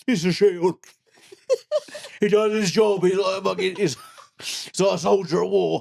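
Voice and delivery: mock very high, drawn-out, blubbering sobbing. Picturing oneself praising the jelly as a shield: mock crying. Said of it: "Me just crying, like, like, crying, going".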